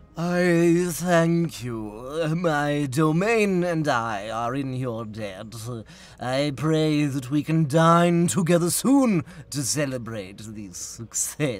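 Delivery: loud vampire voice. Voicing the Count as he thanks the listener, in a vampire voice. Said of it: "I hate your vampire voice".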